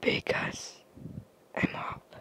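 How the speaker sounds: dark, breathy whispered voice. Reading a story aloud, voicing Mister Hop as he answers: dark voice. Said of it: "talked in a dark voice".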